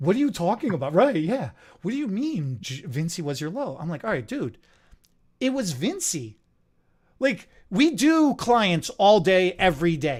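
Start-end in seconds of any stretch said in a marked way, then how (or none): 1.8-3.8 mock sudden serious concern, much quieter. Retelling how he suddenly got all serious when told this, mock-concerned, serious tone. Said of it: "He got all concerned".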